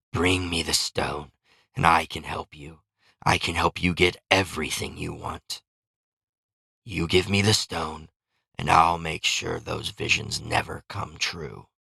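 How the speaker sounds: hissed words in a creature voice. Narrating a beast held at bay by a bright light; hissing beast voice. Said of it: "the beast hissed".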